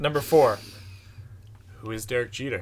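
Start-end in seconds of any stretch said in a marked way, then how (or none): 1.8-2.6 flat, dry deadpan, much lower. Speaker counting down a list quotes a line, deadpan delivery. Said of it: "Just deadpan".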